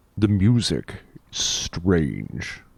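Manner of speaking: large, imposing, weighty voice. Retelling a line spoken by Val Phelan, in a big booming voice. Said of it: "with this big booming voice".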